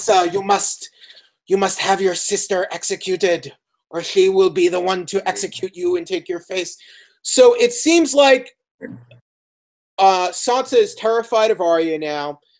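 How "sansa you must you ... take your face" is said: whispery Irish voice, faster. Quoting a man's advice to sansa, in a whispery irish voice. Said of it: "he talks in that whispery voice, that kind of Irish whispery voice".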